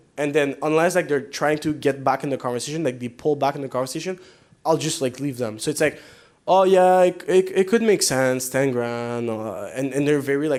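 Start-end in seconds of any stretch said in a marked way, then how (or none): 6.5-9.4 put-on casual, slow, offhand, half-interested nonchalance. Retelling how a prospect answers about ten grand: imitating a nonchalant prospect. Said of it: "they're very, like, nonchalant the way they talk".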